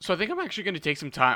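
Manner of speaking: voice breaking and cracking up high mid-sentence. Thinking aloud about what he'll do next, voice crack. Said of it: "voice crack right there".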